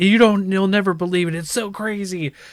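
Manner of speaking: mock thrilled, excited, high-pitched gushing tease. Retelling how an ex-wife described a show: imitating someone excited. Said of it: "she was so excited".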